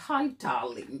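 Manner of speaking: airy, breathy, near-whispered put-on British accent. Reading out a live chat comment to her: best British accent. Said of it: "I'm going to say that in my best British accent".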